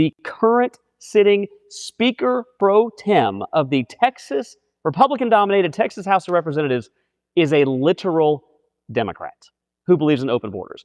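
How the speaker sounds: very slow, deliberate delivery. Speaker announces he will spell the point out, saying it real slowly. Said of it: "I'm going to say this real slowly".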